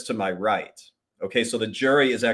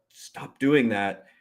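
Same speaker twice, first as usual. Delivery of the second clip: imitated whisper. Retelling how the partner attorney warned him in court: imitating a whisper. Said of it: "He would whisper".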